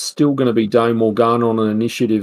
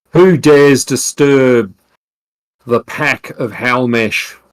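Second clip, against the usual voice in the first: calling out loudly, challenging tone; 4 dB louder than usual. Voicing Halmesh calling out to those who disturb the pack: Halmesh calling out. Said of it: "maybe Halmesh even calls out".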